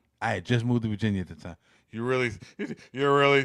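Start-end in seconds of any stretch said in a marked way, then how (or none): 1.9-3.5 put-on cocky, arrogant voice.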